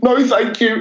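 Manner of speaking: prim, very British, polite, very high voice. Retelling how they reacted whenever someone jumped out to scare them, retelling a polite british refusal. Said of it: "in the most kind of British way possible".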